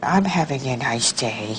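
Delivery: sorrowful, downcast delivery in a low, sad tone. Asked to say a sentence in a sad tone of voice: sad tone. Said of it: "say it in a sad tone of voice".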